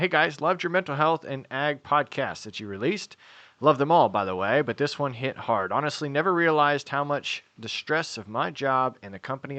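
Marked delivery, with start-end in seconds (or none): none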